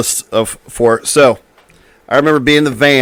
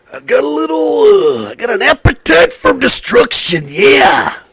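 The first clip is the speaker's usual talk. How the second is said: very high, swooping, drawn-out voice; 13 semitones higher than usual. Naming a favorite band's album in the Macho Man's voice. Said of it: "say their album name in the Macho Man's voice".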